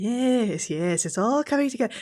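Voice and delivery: eager, high muttering to oneself. Retelling walking in circles before a game, imitating muttering to oneself. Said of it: "I'll be buttering to myself like a psych ward patient".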